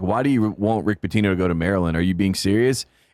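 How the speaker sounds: normal talking voice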